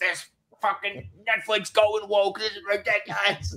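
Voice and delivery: put-on high, indignant elderly man yelling. Recalling watching something on TV, screaming at it like an old boomer. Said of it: "screaming at my T V like an old boomer".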